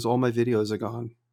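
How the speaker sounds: put-on bone-dry, level, flat deadpan delivery. Recounting a message someone sent about his videos, retelling a deadpan remark. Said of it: "And he's so deadpan".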